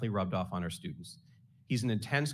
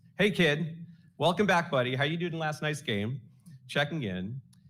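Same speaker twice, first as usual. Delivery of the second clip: mock big, booming, pitched-up voice; 6 semitones higher, 4 dB louder than usual. Speaking to George, mimicking how he greets students in the hallway, booming voice. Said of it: "your booming voice".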